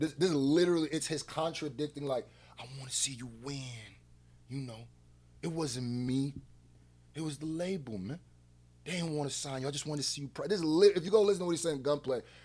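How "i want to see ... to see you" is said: soft, hushed, put-on mimicking voice. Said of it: "this is how he talks".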